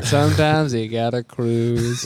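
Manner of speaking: weird, put-on, cool-cat beatnik voice. In a group conversation, keep talking in a weird beatnik voice. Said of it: "This like weird beatnik voice".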